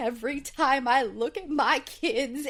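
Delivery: acted, choked-up, tearful voice catching, on edge of crying. Retelling a reality show scene where Jordan cries: imitating someone choked up crying. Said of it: "gets himself all choked up and starts crying".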